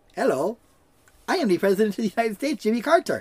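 put-on heavy foreign accent, broken English. Retelling how a man would announce and deliver his Jimmy Carter impression in broken English. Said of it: "in his broken English say".

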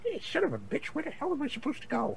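very quiet, hushed, high mumble to oneself. Voicing a character turning around in place; muttering to himself. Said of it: "You can hear him starting to mutter himself".

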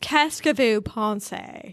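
put-on French spoken in a very heavy British accent. Imitating a character's line in French: French with a very British accent. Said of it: "he speaks French with a very British accent".

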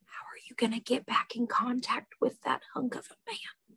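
barely audible, very quiet, hushed whisper. Playing a character who whispers a question to Mel: whispering in character. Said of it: "whispers to Mel".

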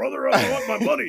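very loud, high-pitched hollering. Demonstrate how to tell him you want your money, in a Hulk Hogan voice. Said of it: "Hulk Hogan's voice".

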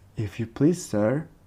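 meek, timid, quiet voice. A narrator reads a desperate character asking the rabbit for help, in a low, timid voice. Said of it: "in a low, timid voice".

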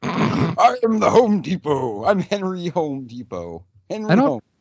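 very slow character voice, every word drawn out. Joking about picturing the store founder as a character: Willy Wonka-esque character voice. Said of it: "this, like, Willy Wonka-esque character".

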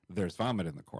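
ordinary talk, nothing marked

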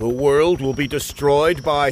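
ordinary talk

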